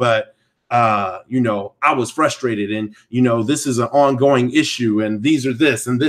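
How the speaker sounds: ordinary talk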